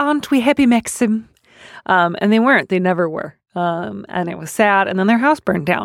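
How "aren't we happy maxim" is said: anxious, fretful, nervous delivery, pitched up high. Recalling how Joan Fontaine spoke to Maxim, imitating Joan Fontaine, mock-nervous. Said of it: "nervously saying things like".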